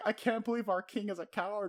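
play-acted sobbing, very high-pitched, tearful. Retelling a character's complaint about their king: imitating someone crying. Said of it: "crying, going".

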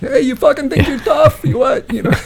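very high-pitched, furious, angry yell. Pretending to yell at her like the guy in the truck. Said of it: "yell at her like the guy in the truck".

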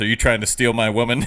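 quiet muttering, as if to himself. Retelling a kitchen showdown from a film, imitating Royal muttering under his breath. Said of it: "he mutters under his breath".

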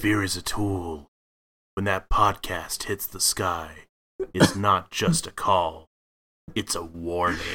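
put-on brooding, gravelly-style superhero voice. A podcast co-host opens the show's intro in a Batman voice. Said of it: "your Batman voice is so good".

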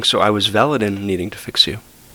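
ordinary talk, nothing marked

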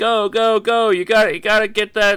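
put-on yelling. Retelling a man with a timer, like a football coach, yelling at Jeffy; retelling a man yelling. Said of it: "yelling at Jeffy".

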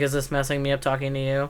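ordinary talk

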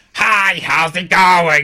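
shrill, very high, very loud full-blast scream. Reviewing a movie, mocking the actor's voice: imitating Adam Sandler screaming. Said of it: "just screaming".

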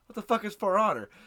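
plain

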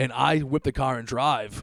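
ordinary talk, nothing marked

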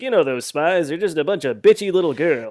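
loud, belted cartoonish character voice. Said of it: "using a voice that he could use as an animated character".

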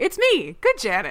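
proud and pleased. Retelling a line from the show, imitating proud Good Janet. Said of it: "I loved the tone in her voice".

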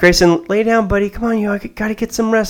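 sugary, honeyed, very sweet high voice. Retelling how the speaker asked a child to lie down: very sweetly. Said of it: "very sweetly".

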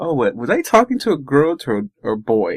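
plain

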